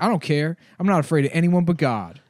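mock very loud, sulky pouting. Retelling what a kiosk worker said after being scolded for dancing: imitating a pouting, upset man. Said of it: "pouting. He's all upset".

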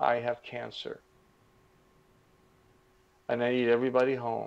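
very quiet, hushed, soft voice. Retelling Mary's words heard over the phone, in a very quiet voice. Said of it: "in a very quiet voice".

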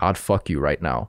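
soft, hushed, close-in stage whisper. Retelling what a woman said close to his ear: imitating a half-whisper. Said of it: "whispers in my ear".

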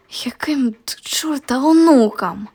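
sharp, hissing delivery. Narrator reads one character answering another's promise: hissed. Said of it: "шикнув Фелікс".

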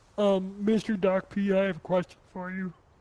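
put-on frog puppet voice. Chatting live, asking another person a question, Kermit the Frog voice. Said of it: "Yes, Kermit the Frog?".

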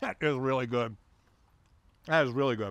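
talking with mouth full. Diner praising the steak while eating with friends, talking with mouth full. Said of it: "Dog with your mouth full?".

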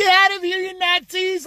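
high, put-on girly voice with a tough edge. Telling the guys about a funny voice, mocking a feminine voice. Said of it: "that fucking voice saying".

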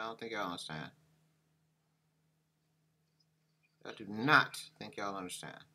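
frustrated and mad. Struggling with a camera that stays out of focus: frustrated and mad. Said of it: "I'm so mad right now".

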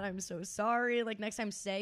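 ordinary delivery

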